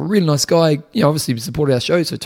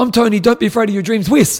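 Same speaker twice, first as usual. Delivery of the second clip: abrupt, sudden high shouted yell; 7 semitones higher, 4 dB louder than usual. Retelling what a newcomer at the gym said: imitating someone yelling. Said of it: "he just yells out".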